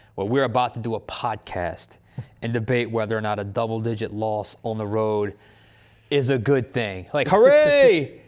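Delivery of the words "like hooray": fake sarcastic cheer, shrill, very high and very loud. Joking about debating whether a double-digit loss is good: sarcastic fake cheer. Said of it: "I'm only being sarcastic there".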